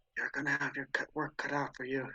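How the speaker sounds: soft whispered aside. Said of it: "I'm gonna whisper to".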